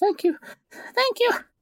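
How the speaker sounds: very high voice, choking back sobs. Playing a character who keeps repeating thanks, holding back sobs. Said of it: "tries to hold back the sobs and just repeats".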